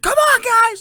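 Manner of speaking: shrill, loud, fired-up shout, high-pitched. Imitating a quarterback's hype pregame speech: Patrick Mahomes voice. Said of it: "in that voice".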